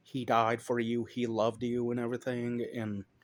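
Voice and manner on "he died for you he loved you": normal talking voice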